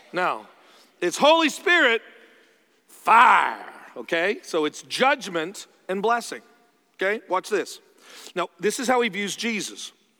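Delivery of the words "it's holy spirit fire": drawn-out Southern accent, loud. Preaching on the Holy Spirit and fire: Southern accent on fire. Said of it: "I got Southern there when I did the fire".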